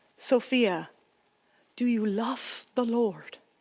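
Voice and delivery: put-on thick Dutch accent, laid on heavily. Quoting what her grandmother always asked her, in a thick dutch accent. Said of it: "In her thick Dutch accent".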